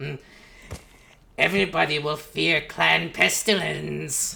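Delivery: loud, rasping rat-creature voice. Talking about landing a Skaven role, the speaker demos the Skaven voice. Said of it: "talking in the Skaven voice".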